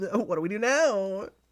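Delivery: put-on very high, drawn-out, full Valley Girl voice. Acting out a character's line in an imagined scene: Valley Girl voice. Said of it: "Just go with the full Valley Girl, Girl voice again".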